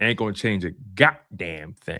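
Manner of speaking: emphatic, hard-hit T in goddamn.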